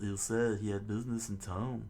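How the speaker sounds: ordinary delivery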